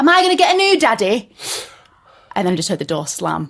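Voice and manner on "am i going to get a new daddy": very high, loud shout. Retelling shouting to a father leaving with a suitcase: imitating own past shout. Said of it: "I remember just shouting".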